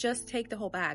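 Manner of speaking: ordinary talk, nothing marked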